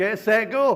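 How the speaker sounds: very strong, broad Scottish accent, loud, high. Starting a race, the speaker calls out the start in a very scottish accent. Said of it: "Did I say it very Scottish?".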